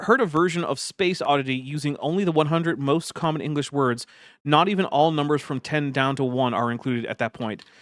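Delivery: ordinary talk, nothing marked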